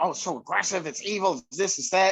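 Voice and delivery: plain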